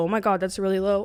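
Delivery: ordinary talk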